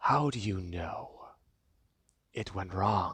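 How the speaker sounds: very deep, menacing villain voice. In a roleplay game, the player voices a character answering: supervillain voice. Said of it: "You're you're talking like a supervillain".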